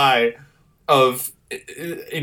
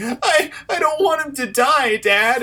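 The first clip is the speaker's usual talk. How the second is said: mock tearful crying, very high, slow, drawn-out; 11 semitones higher than usual. Retelling a TV promo scene, imitating Jonathan Taylor Thomas crying.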